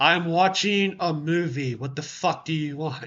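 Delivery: put-on annoyed, irritated tone. Telling the listener how they answer a call, imitating their annoyed tone. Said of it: "you hear my tone".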